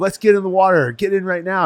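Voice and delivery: put-on high yelling. Retelling how others on a boat called everyone into the water: imitating people yelling. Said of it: "they started yelling".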